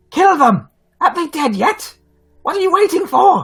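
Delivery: very high, shrill bird-creature harpy cry. Narrator voicing the harpy owl calling out during a fight, harpy owl calling out. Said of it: "you you hear a voice uh, call out".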